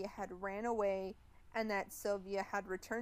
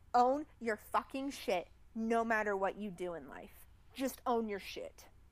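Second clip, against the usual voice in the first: angry, heated rant; 3 dB louder than usual. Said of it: "I went on, like, a little rampage there".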